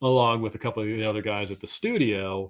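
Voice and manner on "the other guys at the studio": ordinary talk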